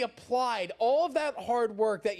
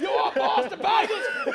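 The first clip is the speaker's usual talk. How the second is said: put-on very high, loud, drawn-out, startling holler; 9 semitones higher, 5 dB louder than usual. Asking if the sign guy yells this: imitating a man yelling. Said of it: "Is that what he's yelling?".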